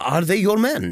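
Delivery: impatient and high. A man repeats his question when the other does not answer: impatient repeat. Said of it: "he repeated impatiently".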